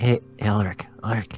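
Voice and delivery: talking quietly. Calling another character's name in character, talking quietly. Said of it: "We don't really have to talk quietly".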